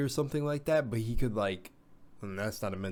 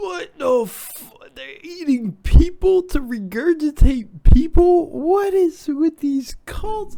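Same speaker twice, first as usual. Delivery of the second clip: yelling, much higher and louder; 16 dB louder than usual. Talking into the mic about cult theories, the speaker gets carried away: yelling. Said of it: "I'm probably like yelling into the mic".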